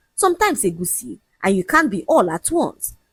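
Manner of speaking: ordinary delivery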